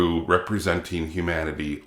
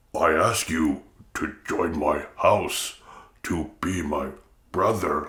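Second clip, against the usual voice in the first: deep, pushed-down voice, measured and slow. Imitating an actor straining to speak deep like a Klingon: imitating a strained deep Klingon voice. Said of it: "but he's like".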